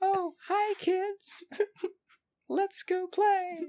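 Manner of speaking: put-on very high voice of an eight-year-old. Retelling how a masked man talks to the children; 8-year-old child's voice. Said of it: "in an 8-year-old's voice".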